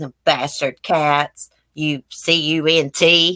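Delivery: slow, drawn-out put-on Australian accent. Imitating a cussing pet bird that talks, in an australian accent. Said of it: "he says in the Australian accent".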